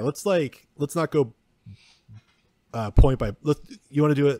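loud stutter, tripping over words and restarting. Planning how to go through the movie with another speaker, stuttering a lot. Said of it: "I'm, like, stuttering so much".

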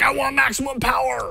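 high, squealing, greedy power-hungry voice. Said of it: "'cause it's like".

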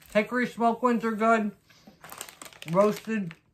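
muffled speech through a mouthful. Tasting flavored almonds and recommending them: talking with mouth full. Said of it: "talking with my mouth full".

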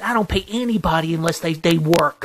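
acted-out, toned-down, mild yell. Retelling what he yelled back after a complaint: imitating someone yelling. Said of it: "And you know what he yells at me?".

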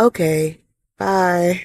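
barely audible, very soft, hushed voice. Retelling the end of a phone call with their husband, in a very quiet voice. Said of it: "in a very quiet voice".

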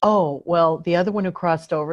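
ordinary talk, nothing marked

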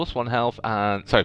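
ordinary delivery, nothing marked

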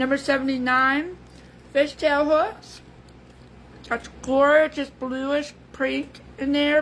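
talking while chewing, mouth full. Reading out item numbers while eating, talking while chewing. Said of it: "sorry about my chewing".

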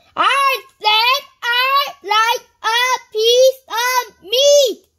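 very high, very loud, very slow booming roar. Reading a story aloud, a character repeats himself after going unheard; roared. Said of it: "roared Mr".

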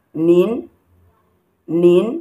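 nin, rising second tone. Demonstrating the rising tone on a syllable, rising tone. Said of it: "because the tone on it is the rising tone".

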